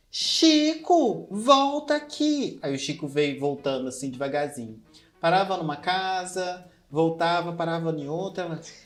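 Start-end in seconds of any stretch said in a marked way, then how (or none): 0.2-2.6 frantic, very high-pitched calling-out shout, acted. Retelling their mother's shouting, imitating her shout. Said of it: "minha mãe gritando".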